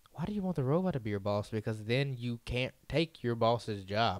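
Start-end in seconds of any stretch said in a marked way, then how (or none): none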